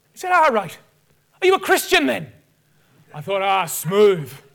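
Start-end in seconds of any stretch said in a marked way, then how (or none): 0.2-2.4 terrible fake Irish accent, higher-pitched. Retelling what a stranger who came up said, in a terrible irish accent. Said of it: "this guy comes up to me with his Irish accent".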